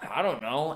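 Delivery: ordinary delivery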